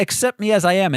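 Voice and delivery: ordinary talk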